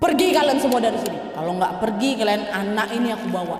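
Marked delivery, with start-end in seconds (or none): none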